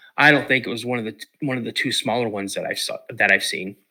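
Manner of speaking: ordinary delivery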